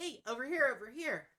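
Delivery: excited character voice. Ralric waves, trying to get your attention, calling out excitedly. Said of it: "waving and pretty excitedly".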